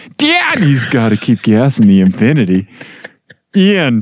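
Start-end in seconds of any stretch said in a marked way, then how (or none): 0.2-2.7 odd, swooping, silly put-on dad voice. Showing the friend the contrast with normal talk: odd put-on "daddy" voice. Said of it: "I'm talking to you like this, and then I".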